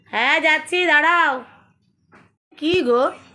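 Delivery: high-pitched, loud calling out.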